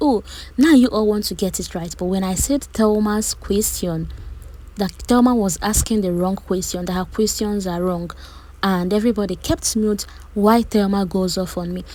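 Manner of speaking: ordinary talk, nothing marked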